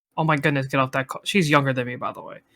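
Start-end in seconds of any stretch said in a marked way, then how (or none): 0.2-1.3 mock-panicked young girl voice. Retelling how a younger sister came in during a call, imitating her freaking out. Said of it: "she starts freaking like freaking out".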